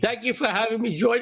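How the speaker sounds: choked-up, emotional voice catching. A guest thanks a friend for having them on each week, choked up. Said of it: "I'm getting choked up".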